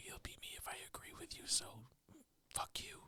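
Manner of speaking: very quiet, hushed whisper under the breath. Retelling how the other speaker apologized for a father, imitating someone whispering. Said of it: "you're whispering".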